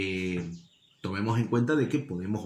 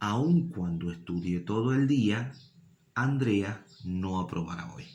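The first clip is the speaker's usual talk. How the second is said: brief silence right after "día". Reading a sentence aloud to find where the clause ends: short pause after día. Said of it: "ven cómo ahí hacemos un pequeño silencio, una pequeña pausa".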